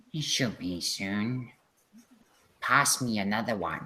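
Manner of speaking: low, quiet, muttered murmur. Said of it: "Quiet voices mumbling something".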